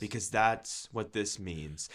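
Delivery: acted-out, very quiet, unenthused flat monotone drone. Replicating how a woman delivered her message, imitating a flat monotone. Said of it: "No enthusiasm".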